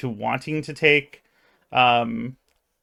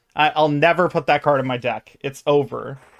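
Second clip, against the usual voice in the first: plain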